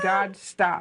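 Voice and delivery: plain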